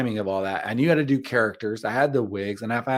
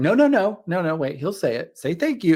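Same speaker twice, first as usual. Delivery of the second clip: insistent, unrelenting voice, pitched up; 7 semitones higher, 3 dB louder than usual. Retelling a skit scene, the parent insisting the child thank the server: imitating the insistent mom. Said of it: "I'm playing the mom".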